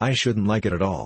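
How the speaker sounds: ordinary delivery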